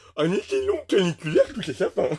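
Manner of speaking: goofy, sing-song, high, swooping put-on dog voice. Imitating how the speaker's German shepherd would talk, Shtukov's voice. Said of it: "je fais aussi avec l'accent de Shtukov ... il parle un peu comme ça".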